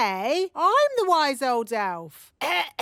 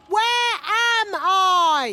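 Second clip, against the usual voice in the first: raised, louder voice; 3 semitones higher than usual. Asking a robot the same question again after being told: louder. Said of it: "maybe ask louder".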